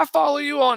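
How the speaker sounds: very high-pitched, excited voice. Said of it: "to have somebody be".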